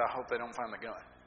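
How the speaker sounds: mock scared, frightened, very low-pitched voice. Retelling your answer after she said there's no joking here; retelling a low, frightened voice. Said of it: "in a very low, getting very frightened voice".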